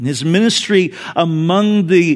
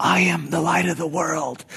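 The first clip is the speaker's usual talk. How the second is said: hushed, barely-there half-whisper; 7 dB quieter than usual. Telling a story, the speaker acts out the mother's line to her boy, half-whispering. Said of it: "she whispered".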